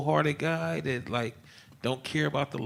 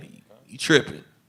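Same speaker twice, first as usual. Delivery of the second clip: loud, derisive, mocking jeer; 7 dB louder than usual. Retelling how they answered his warning, imitating mocking sons-in-law. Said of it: "mocking him".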